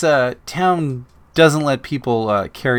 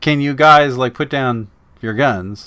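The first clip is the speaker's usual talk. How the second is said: plain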